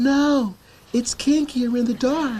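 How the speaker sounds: barely disguised, weird, unconvincing fake female voice. Pretending to be a girl in the dark barn: weird fake girl voice. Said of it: "does not even try to sound like a girl".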